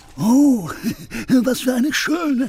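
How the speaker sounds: delighted, very high pitch, drawn out and slow. Narrator reading a tale, the wolf finding a bottle in the forest: delighted. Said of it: "Er freute sich".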